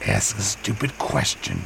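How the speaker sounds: mumbling under breath. Man climbing toward a glowing cave, muttered to himself. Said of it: "he muttered to himself".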